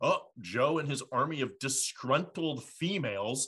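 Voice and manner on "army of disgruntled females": normal talking voice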